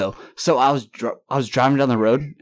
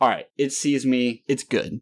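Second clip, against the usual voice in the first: plain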